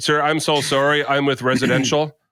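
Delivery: plain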